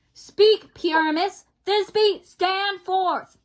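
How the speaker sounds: with authority, authoritative, commanding. Playing the director in a play rehearsal, calling the actors forward with authority. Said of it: "do it with authority".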